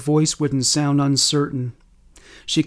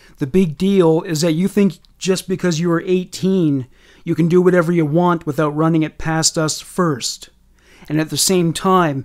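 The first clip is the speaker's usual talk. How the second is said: ordinary delivery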